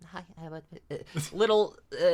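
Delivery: acted-out stammer. Describing how an anime character greets people, imitating introverted stuttering. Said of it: "introverted stuttering like that".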